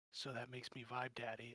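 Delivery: acted under-breath muttering. Retelling what you said when he introduced you, muttering under your breath. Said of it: "under my breath".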